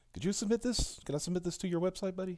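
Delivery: put-on passive aggressive voice. Joking about sending a message to a website, imitating Ethan Van Sciver's passive aggressive cadence. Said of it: "that weird passive aggressive, like, uh, kind of, like, uh, cadence that Ethan does".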